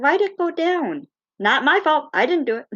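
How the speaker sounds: high, innocent-sounding cat voice. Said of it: "she looks down at it like".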